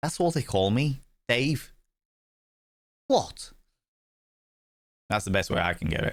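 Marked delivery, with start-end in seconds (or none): 0.0-1.7 Liverpool accent, pitched up higher. Explaining how they voice accents when reading aloud: Dave Lister Liverpool accent. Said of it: "With Liverpool, I'd try and do".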